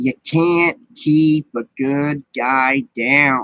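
very slow voice, every word drawn out. Showing the best impression possible right now: Chucky impression. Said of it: "my, uh, Chucky impression".

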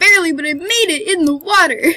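very loud, high, triumphant near-crying cheer. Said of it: "It sounds like I'm about to cry".

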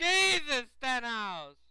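loud, high-pitched yelling. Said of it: "Stop yelling".

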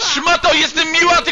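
high, loud, angry yelling outburst.

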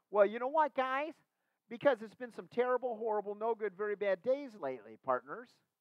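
play-acted, very high, very loud, shrill exasperated tone. Acting out Mary answering the angels, imitating Mary with hands on hips. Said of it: "putting her hands on her hips and going".

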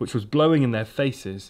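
plain

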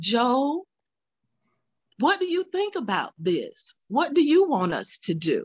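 lively, animated, high sing-song questioning tone. Recalling how Judith asked the grandfather's opinion: imitating Judith's voice. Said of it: "in her Judith voice".

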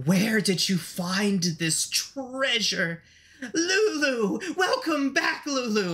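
slow, high, croaking hag voice, drawn out. A game master voices a hag who spots lulu, in a croaking hag voice. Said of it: "She croaks, spittle dribbling out of her mouth".

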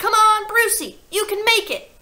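very loud, very high, shrill cheering shout. Someone in the watching crowd cheers on a boy in a contest, shouting. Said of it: "someone shouted".

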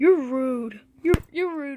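soft, hushed character voice. While filming a scripted skit, one performer speaks: Freddy voice. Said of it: "Why do you sound like Freddy?".

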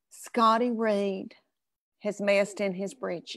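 hushed, confiding stage whisper under the breath. Retelling what mama half-whispered in church: imitating mom's half-whisper. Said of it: "And she whispers to me".

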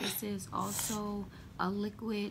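plain

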